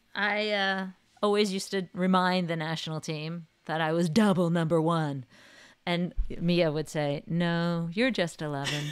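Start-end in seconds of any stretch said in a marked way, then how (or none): 7.2-8.7 flat, dry, unbothered deadpan. Retelling how Mia would answer your reminders to the national team, imitating her deadpan reply. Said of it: "In her deadpan way".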